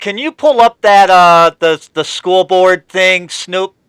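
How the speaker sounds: very loud, high-pitched yelling. Asking another speaker to pull up a school board story: yelling into the microphone. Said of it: "stop yelling into your microphone".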